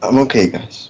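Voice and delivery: slightly teary, reassuring voice, slightly high. After an emotional moment, speaking to the others, tearing up. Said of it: "Just tearing up a bit".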